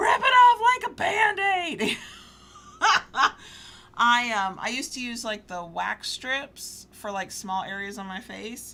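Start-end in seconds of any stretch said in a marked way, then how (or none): 0.0-2.0 very high, shrill, very loud urgent shout. Speaker recounts yelling at videos on her phone; retelling a yell. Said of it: "and I'm yelling".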